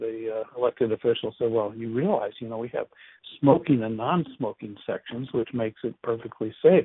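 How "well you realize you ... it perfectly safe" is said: ordinary talk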